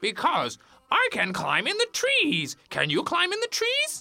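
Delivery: very high, loud, sing-song cartoon monkey voice. Acting the monkey laughing at the rabbit: voicing the monkey. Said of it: "and he saw Monkey".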